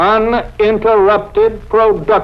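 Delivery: uninterrupted stressed, slow and deliberate.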